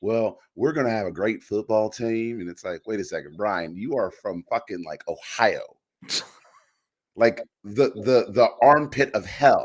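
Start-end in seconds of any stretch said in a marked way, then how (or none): 0.0-2.4 put-on Southern accent. Mocking a coach who picked up an accent after being hired: Brian Kelly's put-on Southern accent. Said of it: "develops a southern dialect like this".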